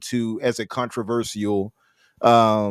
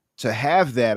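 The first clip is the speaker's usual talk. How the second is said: ordinary delivery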